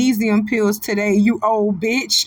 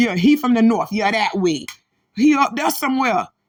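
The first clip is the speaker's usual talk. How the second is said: normal talking voice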